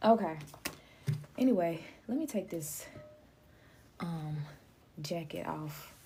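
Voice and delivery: out of breath, winded, slow, halting, breaking mid-phrase. Speaker telling y'all they don't know why they're winded; out of breath. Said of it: "Maybe that's why I'm out of breath".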